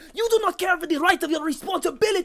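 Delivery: furious, very high-pitched, spitting scream. An old man, held back by Smoke, yells at you: yelling. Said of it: "he's just yelling at you like".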